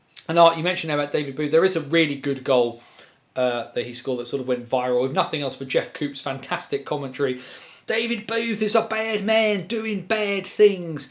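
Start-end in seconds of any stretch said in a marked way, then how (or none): 7.9-11.2 exaggeratedly bad Australian accent, higher pitch, slow, drawn-out. Quoting a commentator's call on a viral goal: worst Australian accent. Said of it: "he says in the worst Australian accent".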